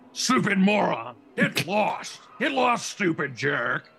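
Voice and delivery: harsh ventriloquist dummy rasp. A narrator reading a dummy's line to a girl, raspy dummy voice. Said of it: "The dummy rasped".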